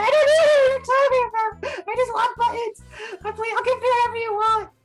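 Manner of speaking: acted sobbing. Voicing a crying goblin being wrestled in the dirt: acted sobbing. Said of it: "He's sobbing".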